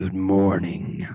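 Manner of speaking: very loud, growling voice. Reading a story aloud, voicing Philip who growls a greeting: growling. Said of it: "Philip growled".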